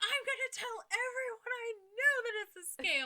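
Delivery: very high, very loud, shrill, furious yell. Retelling how she lost it with the scam callers; retelling losing it. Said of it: "And that was when I lost it".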